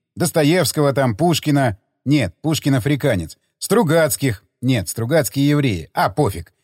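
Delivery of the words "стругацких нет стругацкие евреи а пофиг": ordinary delivery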